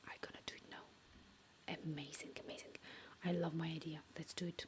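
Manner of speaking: soft, unvoiced whisper under the breath. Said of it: "I'm whispering because".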